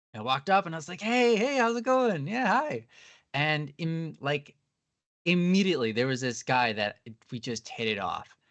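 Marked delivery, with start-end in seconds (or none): 1.0-2.8 acted-out upbeat, energetic, very high voice. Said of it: "have some energy".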